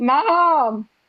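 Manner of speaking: loud scream. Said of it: "And I screamed".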